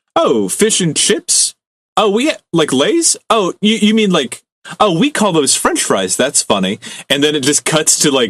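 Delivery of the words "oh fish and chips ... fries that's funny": put-on high, sing-song American accent, swooping up. Retelling a TikTok of an American comparing food names: imitating an American TikTok guy. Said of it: "there's a TikTok of a guy going like".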